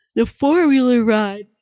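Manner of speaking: words through a yawn. Recalling a camping trip on the coldest weekend, the speaker talks while yawning. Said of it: "sorry, I'm yawning".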